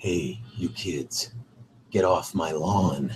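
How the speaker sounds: put-on voice, dropped very low and deep. Asked for another impression, speaker does Clint Eastwood voice. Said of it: "Clint Eastwood".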